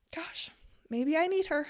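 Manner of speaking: choked-up, tearful, close to crying, pitched high. Talking about painting the little girl from a dream: tearing up. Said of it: "I'm gonna tear up a little bit".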